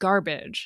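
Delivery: garbage with strong stress on first syllable gar. Comparing English and Spanish stress, saying garbage: stress on first syllable GAR. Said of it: "emphasis on gar".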